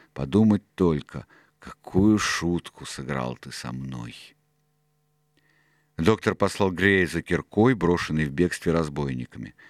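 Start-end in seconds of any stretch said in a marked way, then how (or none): 0.2-4.2 muttered under the breath, lower and slower. Reading a story, one man answers a former pirate's greeting: muttered. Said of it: "пробормотал Сильвер".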